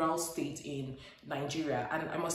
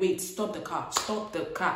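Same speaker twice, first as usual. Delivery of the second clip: ordinary talk, nothing marked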